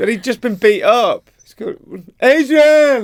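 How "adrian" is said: put-on boxer yell, much higher, louder. Speaker apologizes to listeners, then does a Rocky impression. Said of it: "I'll stop doing that impression".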